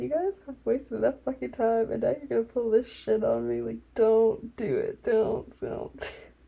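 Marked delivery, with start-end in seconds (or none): none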